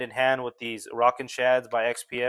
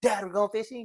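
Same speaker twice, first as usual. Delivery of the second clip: put-on eager, high, excited little girl voice; 9 semitones higher than usual. Act out your six-year-old daughter answering when you say you want to fish, in a put-on kid voice. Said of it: "in a more kid voice".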